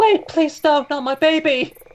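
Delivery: yelling in put-on woman's voice. A player's character tries to create a pause, shouting in a woman's voice. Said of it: "shout in a woman's voice".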